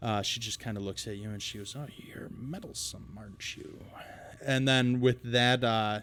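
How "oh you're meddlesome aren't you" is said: rough, rasping, gravelly whisper in a female voice. Narrating a woman flanked by two men, speaking to you, gravelly female voice. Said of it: "with this gravelly voice".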